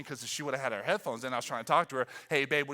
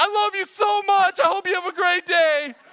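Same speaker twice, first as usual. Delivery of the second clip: shrill, very loud, high-pitched shout; 10 dB louder than usual. Retelling a mom buckling Micaiah into a seat, imitating someone shouting. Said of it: "you're like shouting these beautiful words".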